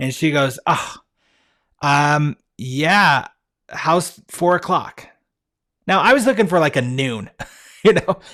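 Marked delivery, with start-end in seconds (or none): 0.7-5.1 very slow, drawn-out relieved tone. Speaker retelling how she answered his late checkout request, imitating a relieved voice. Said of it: "you can hear the relief in her voice".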